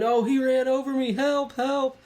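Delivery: put-on woman's scream. Retelling a confrontation, the speaker acts out a woman on the ground; imitating a woman screaming.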